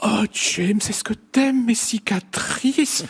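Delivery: very high, sugary, small voice, slow. Criticizing a film character, quoting her line in Deborah Kara Unger's small sugary voice. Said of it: "il lui a donné une petite voix comme ça, un peu sucrée".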